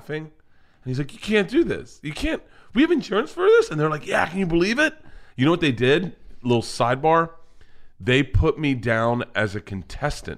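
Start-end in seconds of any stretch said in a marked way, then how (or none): 1.1-3.7 play-acted very high, swooping laughing-till-crying voice. Retelling how a man read a list in a pitch room, imitating someone crying with laughter. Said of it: "crying, laughing".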